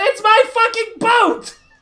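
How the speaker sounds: furious, high, angry yelled outburst. Recounting an argument over a boat, quoting its owner as he yells: retelling a yell. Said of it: "and he yells out".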